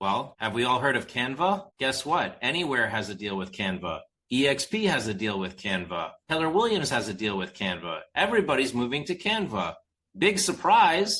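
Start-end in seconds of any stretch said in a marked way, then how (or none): 10.2-11.2 heavy sarcasm with mock surprise, pitched up. Talking about brands moving to Canva: sarcastic. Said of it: "I'm being sarcastic".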